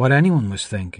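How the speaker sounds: usual speaking voice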